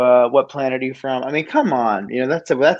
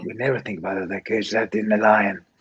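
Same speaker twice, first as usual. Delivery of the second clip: put-on Danish accent, lower and quieter; 4 semitones lower, 6 dB quieter than usual. Answering a request to do a Mads Mikkelsen impression: Mads Mikkelsen impression. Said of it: "how good is your Mads Mikkelsen impression".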